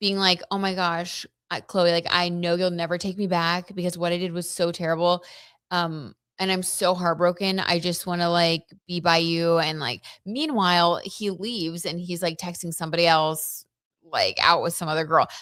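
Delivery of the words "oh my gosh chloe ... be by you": usual speaking voice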